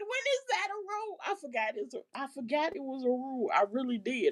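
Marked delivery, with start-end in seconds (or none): 0.0-1.2 raised high-pitched shout. Retelling own reaction to a referee's call: imitating own yelling. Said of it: "I'm yelling".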